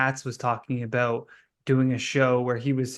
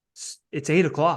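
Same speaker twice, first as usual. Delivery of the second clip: very serious, totally earnest delivery; 3 semitones higher than usual. Retelling how Jerry Seinfeld spoke when serious before a show: imitating serious Seinfeld. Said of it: "Seinfeld is just so, like, serious".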